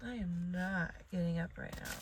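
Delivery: ordinary talk, nothing marked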